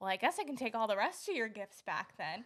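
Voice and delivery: put-on grumpy, grouchy dad voice. Retelling a dad's reaction in a gift-opening video: imitating a grumpy dad. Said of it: "acting grumpy".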